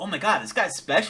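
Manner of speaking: mock amazed, hyped exclamation. Retelling a character's reaction to a fight: imitating a hyped character. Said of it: "Engine was hyped".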